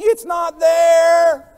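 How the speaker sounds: put-on wail, high, very loud and whiny. Telling a story about searching at home, the speaker acts out a husband's put-on whiny yell. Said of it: "employ the whiny husband voice".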